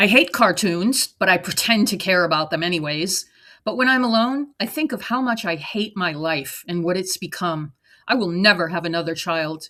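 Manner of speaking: normal talking voice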